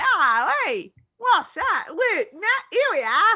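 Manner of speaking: attempted Australian accent. Joking about accents, the speaker tries an Australian accent. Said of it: "And if I was gonna go Australian".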